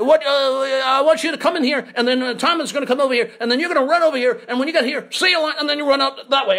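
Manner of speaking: put-on high, fast, rushed speech in an Australian accent. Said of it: "So he said".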